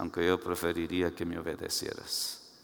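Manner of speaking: mock muttering through teeth. Acting out what one says when accepting a gift, retelling a mutter under breath. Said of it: "Y así entre dientes le dice".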